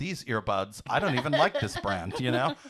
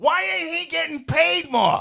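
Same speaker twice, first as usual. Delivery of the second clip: put-on angry housewife voice, higher and louder; 13 semitones higher, 5 dB louder than usual. Acting out a housewife storming the boss's office: imitating an angry Italian housewife. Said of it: "she's like".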